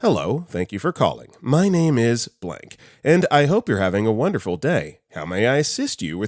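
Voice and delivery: put-on robotic voice. Retelling answering a caller with a locked account, in robot mode. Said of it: "robot mode".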